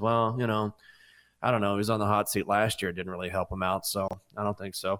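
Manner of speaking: quiet, low-key, understated, offhand tone. Retelling a press conference answer, quietly imitating Lane Kiffin. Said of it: "And Lane just quietly says".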